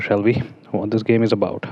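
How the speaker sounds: plain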